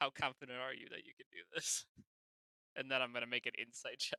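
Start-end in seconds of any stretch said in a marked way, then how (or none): 0.0-1.9 expressionless, flat, level deadpan. In a tabletop game, a player's character questions another character: deadpan tone. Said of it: "it's like a deadpan tone".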